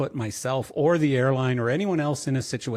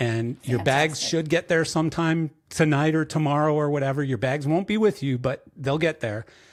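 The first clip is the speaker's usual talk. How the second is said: plain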